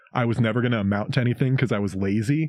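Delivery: ordinary talk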